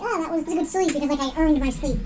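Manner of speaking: ordinary talk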